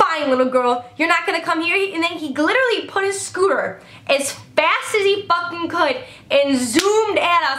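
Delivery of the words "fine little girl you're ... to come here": mock angry, mad man's voice. Retelling what a strange man said after he got mad: imitating an angry man. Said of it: "He got mad".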